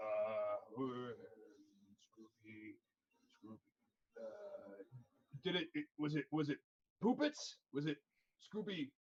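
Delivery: very low, slow, fumbling giant devil voice. Game master voicing a huge archdevil who opens a book to find a player's name: archdevil fumbling for a name. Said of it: "Um, and this this like archdevil is like twenty feet tall. / Um, and this this like archdevil is like twenty feet tall. His wings are like the size of like uh uh like small airplanes. / he walks over".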